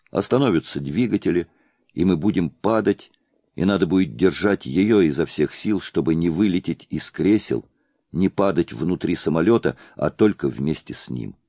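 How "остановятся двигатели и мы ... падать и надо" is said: plain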